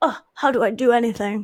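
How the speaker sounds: put-on hapless, helpless, bumbling young leading-man voice. Describing a movie character, doing an impression: Hugh Grant impression. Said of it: "my impression of Hugh Grant in his twenties".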